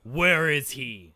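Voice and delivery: very loud, booming bellow. A storyteller voicing a creature pointing its axe at the listener, bellowing voice. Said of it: "in this bellowing voice that probably can be heard for miles".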